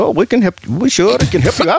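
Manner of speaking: put-on Indian accent, eager. Retelling the dad's story about an indian man offering help; put-on indian accent. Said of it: "your dad was giving this accent".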